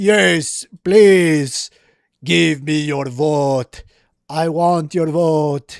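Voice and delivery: very slow, deep, loud, drawn-out pleading vampire voice. Acting out a vampire-like politician asking for votes: mock vampire voice. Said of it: "get a cape going, you know? And she's like".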